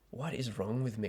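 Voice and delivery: ordinary talk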